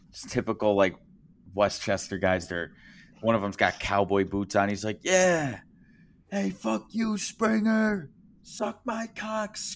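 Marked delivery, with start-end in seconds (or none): 5.1-9.6 very high, drawn-out shrieking scream. Retelling what a young fan in cowboy boots yelled: imitating a fan screaming.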